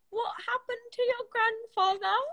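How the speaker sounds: very high-pitched put-on British accent. Retelling a woman's question, in a British accent. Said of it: "she goes in a British accent".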